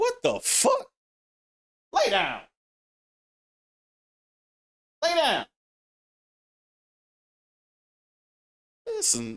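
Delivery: very high, swooping yell. Mid-rant, the speaker breaks off to yell at their dog. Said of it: "I'm yelling at my damn dog".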